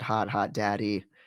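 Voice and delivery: normal talking voice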